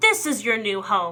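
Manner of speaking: cackled, witch-like cackle. The witch pushes the children into cages, cackling. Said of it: "she cackled".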